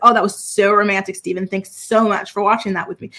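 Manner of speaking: put-on ironic, insincere, sarcastic tone. Retelling a fiancée's complaint after a fireworks show: imitating Monica being sarcastic. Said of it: "she's being all sarcastic".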